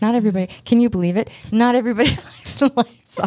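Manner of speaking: speaking through laughter. In a conversation, failing to get through it without laughing: laughing while talking. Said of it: "I was going to do it without laughing".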